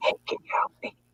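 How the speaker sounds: secretive, very hushed whisper, barely voiced. Retelling how a school calls for help: imitating someone whispering.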